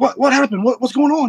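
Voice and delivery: very high, rushed, excited stammering voice. Retelling greeting a hunting partner back at camp: imitating own excited past self. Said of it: "I was all excited".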